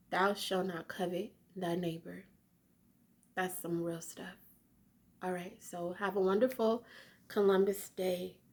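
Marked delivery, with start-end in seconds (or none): none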